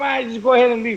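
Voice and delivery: ordinary talk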